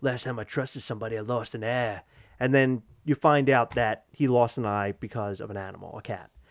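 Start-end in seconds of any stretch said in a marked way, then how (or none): 0.0-2.0 put-on soft, quiet speech in an Australian accent. Quoting a character's line from Winter Soldier, speaker does Nick Fury in an Australian accent. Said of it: "You made him sound Australian".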